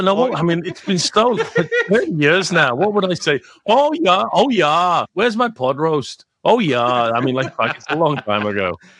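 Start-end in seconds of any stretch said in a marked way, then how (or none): 3.6-6.8 higher-pitched Minnesota accent. Asked by a friend for your best regional impression, you keep going in a Minnesota accent. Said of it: "give us your best Minnesota accent".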